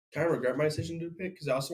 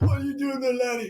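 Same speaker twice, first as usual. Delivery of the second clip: put-on very high, loud old man voice; 10 semitones higher, 5 dB louder than usual. Showing the voice used for one of the speaker's characters: old man voice. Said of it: "That's my old man voice".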